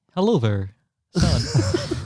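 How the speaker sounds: robotic speech-synthesizer voice, like an electronic talking toy. Playing an AI as listeners laugh, in a Speak & Spell voice. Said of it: "like a speak and spell".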